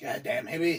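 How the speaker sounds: put-on bad cartoon-boy impression.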